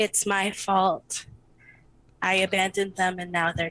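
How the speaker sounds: low, quiet, hushed delivery, not quite a whisper. A game narrator voices a character's line: quiet, not quite a whisper. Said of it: "in the same kind of like quiet".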